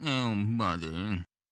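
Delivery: put-on cartoon dog character voice. Asked for a favorite voice, showing a Snoopy voice. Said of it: "Snoopy. Which he sounds like this".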